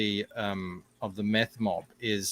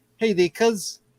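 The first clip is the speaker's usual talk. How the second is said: very high put-on New Zealand accent; 11 semitones higher, 3 dB louder than usual. Showing how someone imitated a Kiwi actor: imitating a Kiwi actor. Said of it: "like that".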